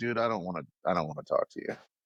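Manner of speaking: mock grumpy, bad-tempered delivery. Recalling how Makes acted in a bad mood: imitating Makes in a bad mood. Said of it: "If he was in a bad mood".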